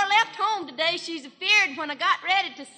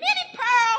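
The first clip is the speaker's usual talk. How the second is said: put-on holler, higher pitch; 6 semitones higher than usual. Retelling how Mammy hollered at her: imitating someone hollering. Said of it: "she hollered at me".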